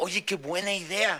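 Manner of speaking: sarcastic, mocking tone in a put-on voice.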